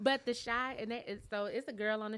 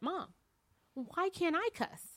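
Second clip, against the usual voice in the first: put-on straight-faced deadpan delivery, pitched higher; 9 semitones higher than usual. Retelling what the son asked: imitating son's straight-faced question. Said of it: "looked me dead in my face with a straight face".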